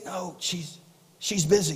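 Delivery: slow, soft, hushed half-whisper. Retelling a joke where a little boy answers the phone: imitating a half-whispering little boy. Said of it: "the little boy was kinda whispering".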